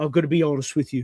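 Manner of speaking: poorly done put-on angry chef voice. Acting out a chef judging a dish: terrible Gordon Ramsay impression. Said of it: "This is a terrible Gordon Ramsay".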